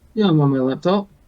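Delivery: irritated, fed-up voice. On a call, a participant answers whether they are on their laptop: annoyed. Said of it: "You sound very annoyed with that sentence".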